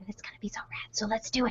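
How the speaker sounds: in a whisper. Host wraps up an announcement to viewers on a live stream, whispering. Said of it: "because I'm whispering".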